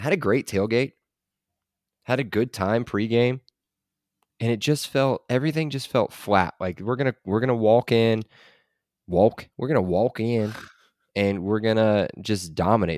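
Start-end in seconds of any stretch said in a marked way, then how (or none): 6.8-13.0 put-on voice with stumbling restarts and halting repeats. Describing a flat game day, then doing a Walt Bell impression. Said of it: "That's my Walt Bell impression".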